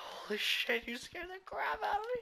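very high-pitched, startled outburst. Playing Minecraft, the speaker gets a sudden scare, startled. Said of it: "I nearly just had a heart attack".

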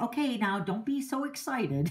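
ordinary talk, nothing marked

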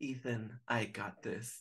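soft, slow, reassuring, in-charge motherly voice. Speaker recapping how the mom spoke to Ethan: imitating Ivy's parent voice. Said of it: "parent Ivy voice was like".

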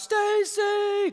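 piercing, very high, loud scream. Retelling screaming a sister's name near a cliff: retelling a loud scream. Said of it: "I screamed really loud".

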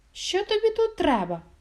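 unwelcoming, put-out, displeased and animated tone. Narrator reads the hare speaking to the hedgehog at his burrow, displeased. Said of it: "невдоволено сказав".

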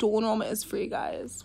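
toned-down, easy, calm, low-energy delivery. Repeating a point from a video, now said with lower energy. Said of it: "I'm just gonna say it right now with less energy".

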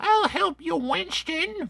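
cartoon ghost voice, pitched way up. Showing off a Slimer toy from a Ghostbusters collection, Slimer voice. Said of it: "You can use a voice for him".

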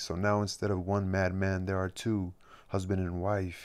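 ordinary talk

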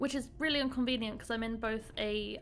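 ordinary talk

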